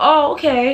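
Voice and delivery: put-on very sweet, sugary voice. Speaker retelling a woman's reply on the phone, in a very sweet voice. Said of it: "Very sweet voice".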